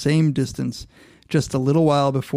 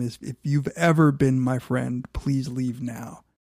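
mock-begging, tearful, pleading tone. Retelling a film death scene where a dying man begs his friend, retelling a tearful begging plea. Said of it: "he's begging, he's in tears, he says to Wyatt Earp, he begs him".

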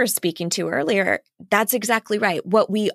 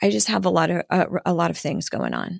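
imitated calm, even speech; 2 semitones lower than usual. Quoting her husband describing being overwhelmed, imitating him speaking calmly. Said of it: "he'll say very calmly".

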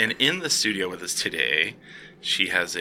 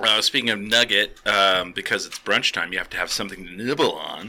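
plain

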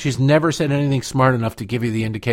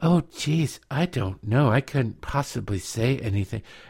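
airheaded, dim, helpless, dumb-sounding voice; 5 dB quieter than usual. Imitating how a film star sounded in interviews: imitating Marilyn Monroe's dumb-sounding voice. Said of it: "she just sounded dumb 'cause it was like".

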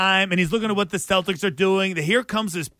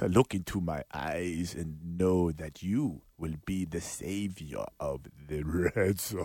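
deep, low, hushed vampire voice; 14 semitones lower, 10 dB quieter than usual. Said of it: "in the Dracula voice".

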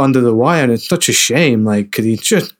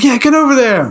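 put-on very high, forced-up shout; 13 semitones higher, 4 dB louder than usual. Retelling a scene where a character is told to raise his voice: imitating someone shouting. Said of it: "raise your voice".

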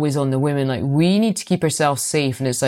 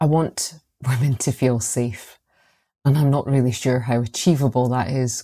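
slow, moved, emotional delivery, feeling every word. Answering what they most hope to achieve in protecting victims, getting emotional. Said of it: "getting emotional just thinking about that".

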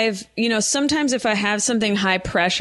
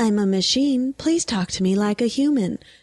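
robotic, automated phone-line machine voice; 3 semitones higher than usual. Retelling a phone tree call, imitating the automated phone voice. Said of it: "the automated voice".

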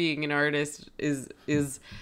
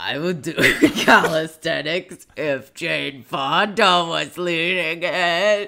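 loud, very slow, stretched-out drawling character voice; 6 dB louder than usual. Asked to repeat it, quoting a character's line: Al voice. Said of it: "I'm honing the Al voice".

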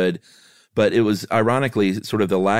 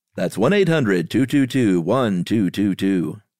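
commercial announcer voiceover delivery. Asked by another speaker to read the number like a tv commercial; announcer voice. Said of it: "You got to do it like a TV commercial".

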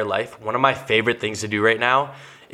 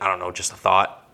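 put-on sarcastic tone; 3 semitones lower than usual. Retelling a remark about dishes left in the sink: retelling own sarcastic remark. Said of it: "so you're being sarcastic".

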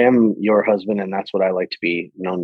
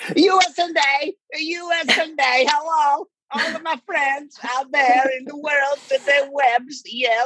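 put-on comic Eastern European accent, much higher; 3 dB quieter than usual. Greet the listeners at the start of a live interview, in a Borat impression. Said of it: "[name] does the interview 100% in a Borat impression".

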